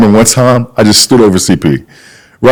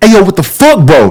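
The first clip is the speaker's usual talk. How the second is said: put-on irritable, heated yelling, high-pitched; 9 semitones higher than usual. Recounting shouting at someone who came running in, retelling a yell. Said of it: "with all the yelling".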